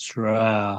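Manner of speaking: put-on drunk-sounding. Coached on saying the word, a speaker tries it again: drunk-sounding. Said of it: "That sounds like I'm drunk".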